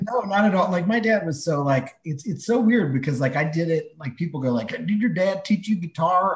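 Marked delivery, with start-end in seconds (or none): 4.7-6.4 put-on Texas accent. Retelling how people ask about the speaker's dad and guitar: put-on Texan accent. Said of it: "I like that accent that you just used to ask the question".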